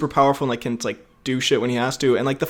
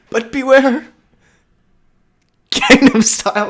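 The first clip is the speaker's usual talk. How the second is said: put-on very old man voice, higher and louder; 9 semitones higher, 5 dB louder than usual. Joining the joke about Dumbledore's warnings: put-on very old man voice. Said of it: "You sound like the oldest man ever".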